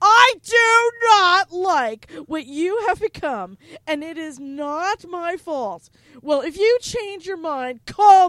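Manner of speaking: emphatic voice, every word stressed as if capitalized. Reading a written message aloud to co-hosts, in an all-caps voice. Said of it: "This is my all caps voice".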